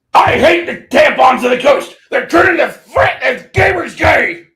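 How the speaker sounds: shrill, high, loud, belted-out delivery. Doing a quick bit to open the recording: Alex Jones impression. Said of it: "do an Alex Jonesism".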